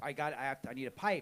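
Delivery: ordinary talk, nothing marked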